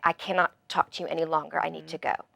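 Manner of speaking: put-on firm, polite tone. Retelling what was said to a brother: imitating own nice but firm tone. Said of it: "nicely but firmly say".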